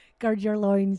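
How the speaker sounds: mock Scottish accent and delivery. Leading a group in a phrase, saying it in a Scottish accent. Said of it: "that would be really good in a Scottish accent".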